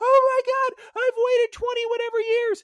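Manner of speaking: very high, loud, tearful sobbing outburst. Retelling a streamer reaction to a game announcement: imitating someone crying. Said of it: "crying and crying, saying".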